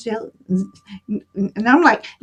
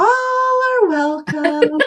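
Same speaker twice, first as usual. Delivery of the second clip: high, little lady voice; 7 semitones higher than usual. Welcoming Brenda as she arrives, repeating the greeting, Poltergeist little lady voice. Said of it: "Sound like that little lady in the Poltergeist movie".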